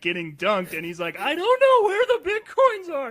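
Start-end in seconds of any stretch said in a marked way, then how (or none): 1.2-3.1 acted, very high, loud sobbing voice. Retelling what a man being tortured said: imitating someone crying. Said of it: "he is just crying in between".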